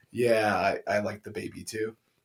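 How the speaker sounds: mock dead-level deadpan, very low, flat monotone. Imitating a favorite show character who says everything in a monotone. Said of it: "says stuff that is like in a very monotone thing".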